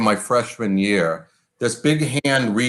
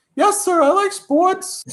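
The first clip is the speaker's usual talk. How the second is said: put-on very high voice like a twelve-year-old boy. Retelling his answer to the man who asked if he liked sports: prepubescent twelve-year-old voice. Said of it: "in just a very manly, prepubescent twelve-year-old voice".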